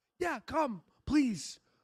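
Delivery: squeaky, very high, eager pleading voice. Voicing a person in the clip inviting someone along: imitating Mel. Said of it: "Mel goes".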